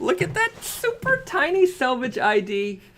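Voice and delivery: very high, squeaky little voice. Speaker pointing out a detail to viewers: high-pitched voice. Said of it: "My voice has got to go high to explain it".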